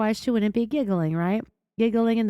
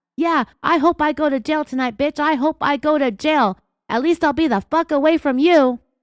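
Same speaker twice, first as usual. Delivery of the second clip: mock furious yell, higher and louder; 7 semitones higher, 7 dB louder than usual. Acting out an imagined account of him yelling at her: imitating a husband yelling. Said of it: "And he was yelling at me".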